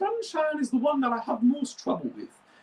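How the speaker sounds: very high-pitched character voice. Going through the characters' voices, he tries Sunshine in a very high voice. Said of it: "I'm doing this very high voice".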